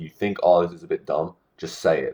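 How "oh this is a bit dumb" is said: plain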